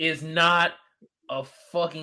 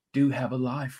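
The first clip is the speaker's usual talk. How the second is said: seductive, sultry, sensual delivery; 4 semitones lower, 4 dB quieter than usual. Answering a co-host who asks for today's lie, in a sensual voice. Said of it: "You like how I said it in that voice?".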